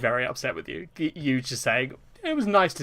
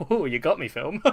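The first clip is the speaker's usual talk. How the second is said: mock cheeky, playful tone; 3 semitones higher than usual. Imagining the listener alone watching a film, acting out their reaction: mock cheeky, smiling. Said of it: "giving a cheeky little smile and being like".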